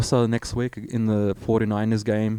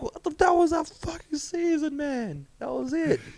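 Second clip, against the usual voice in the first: mock very high, sobbing, wailing cry; 5 dB quieter than usual. Retelling their own reaction when their mom and Jess asked why they were crying, retelling a wailing cry. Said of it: "And I'm like wailing, wailing".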